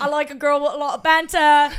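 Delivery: very loud, put-on Essex accent. Parodying a Love Island contestant intro: Essex accent. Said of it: "I am doing the Essex accent".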